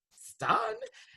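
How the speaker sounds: high-pitched, soft, gushing admiring tone. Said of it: "I was like".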